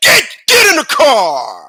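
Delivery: very loud, very slow, high-pitched "get", long "car". Imitating his dad ordering the kids into the car, high-pitched 'get'. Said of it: "You would hear get high pitch".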